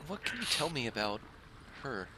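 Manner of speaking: confiding aside, pitched a little up. A character approaches one player out of another's earshot, talking in a hushed voice. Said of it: "kind of talks in a hushed voice".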